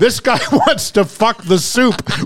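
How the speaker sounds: very high, loud yelling call. Acting out a soup joke, retelling a yell to the kitchen. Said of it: "Me yelling to the kitchen".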